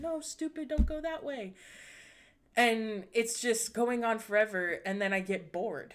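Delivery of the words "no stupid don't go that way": mock hollering, high-pitched yell. Retelling yelling at a person in a horror movie: imitating yelling at a movie. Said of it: "yelling at this person".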